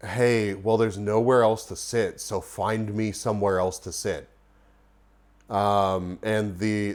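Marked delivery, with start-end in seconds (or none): none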